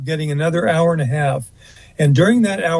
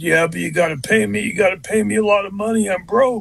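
gruff, growling, higher-pitched voice. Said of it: "in his gruff voice".

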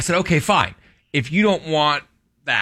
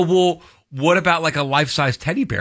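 plain

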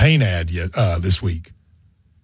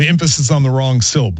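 ordinary talk, nothing marked

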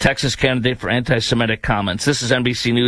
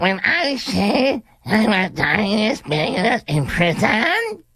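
question-like rising tune at phrase ends throughout; 10 semitones higher than usual. Imitating a congressional candidate's statement: imitating her uptalk. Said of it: "are you familiar with Up Talk?".

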